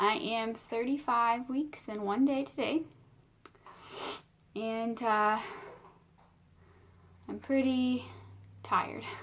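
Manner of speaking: breathless, slow speech. Updating viewers on a tiring pregnancy, out of breath, talking slower. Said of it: "talking a little slower today because I've been very out of breath".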